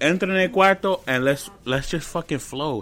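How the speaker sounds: ordinary delivery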